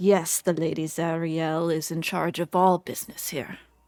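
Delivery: in deep, devout reverence. Voicing a character who raises his arms and speaks the name: reverent. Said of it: "raise his arms up in, like, reverence".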